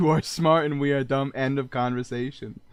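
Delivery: plain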